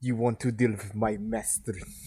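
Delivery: put-on Russian accent, best attempt. Attempting a Russian accent on the spot, in an attempted Russian accent. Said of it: "That my best Russian".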